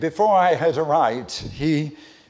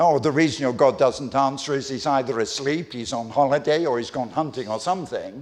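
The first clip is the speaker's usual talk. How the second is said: ordinary delivery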